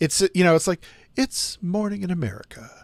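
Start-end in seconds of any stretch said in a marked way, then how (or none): 1.2-2.7 mellifluous, smooth commercial voiceover voice. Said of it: "Mellifluous voice".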